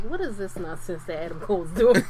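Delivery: ordinary talk, nothing marked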